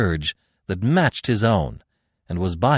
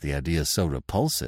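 ordinary delivery

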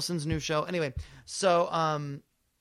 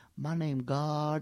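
imitated soft speech. Retelling a man introducing himself in a curtained-off room, imitating very soft speech. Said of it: "they all speak very softly in there".

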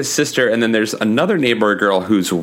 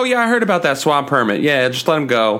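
ordinary delivery

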